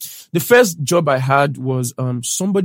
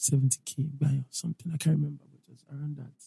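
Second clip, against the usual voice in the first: soft half-whisper, very quiet, barely audible; 11 dB quieter than usual. Telling the others about a first pay, half-whispering. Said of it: "Why are you whispering?".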